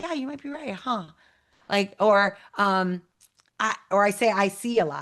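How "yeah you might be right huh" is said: light smiling voice, pitched up a touch. Voicing an inner disagreement out loud, said with a smile. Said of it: "I can say that with a smile and be like".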